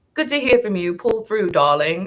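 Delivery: put-on British accent. Retelling what a woman said to her one day: imitating a British accent. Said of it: "a British accent".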